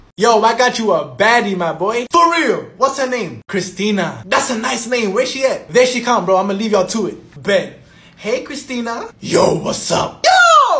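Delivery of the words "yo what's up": surprisingly low, heavy, unexpectedly deep voice. Greeting a new date for the first time: unexpectedly deep voice. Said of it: "what's up with your voice?".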